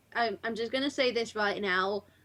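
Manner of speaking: normal talking voice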